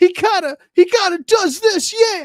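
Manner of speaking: very high, loud, whiny yell. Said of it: "but it's like".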